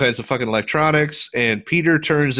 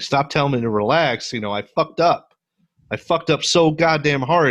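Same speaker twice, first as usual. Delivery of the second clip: tearful breakdown bursting out, losing control; 2 semitones higher than usual. Retelling a movie scene where Peter loses it: imitating Peter crying. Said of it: "and he's crying".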